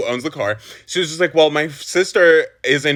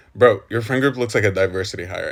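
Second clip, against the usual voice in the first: put-on whisper, lower; 7 semitones lower than usual. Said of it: "whispers to him".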